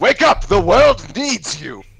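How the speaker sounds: high, loud, self-adoring wizard shout. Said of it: "his own voice shouting".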